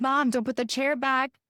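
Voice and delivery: put-on anxious, nervous little kid, pleading tone. Retelling a child's words during a seat argument: imitating a nervous child. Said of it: "my kid is super nervous".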